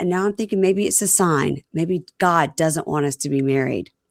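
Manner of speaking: normal talking voice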